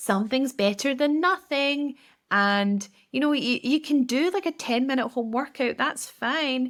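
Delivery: high-pitched, condescending, coddling tone. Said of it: "almost in a quite condescending tone".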